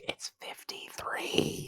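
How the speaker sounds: hushed, very quiet, breathy whisper. Still thinking they must hide, a confused character answers a question, talking really quietly. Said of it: "so I'm talking really quietly".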